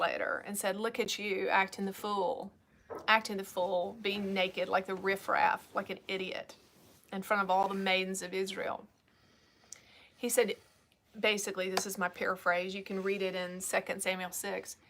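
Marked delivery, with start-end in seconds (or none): none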